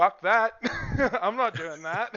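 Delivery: high, loud, laughing outburst.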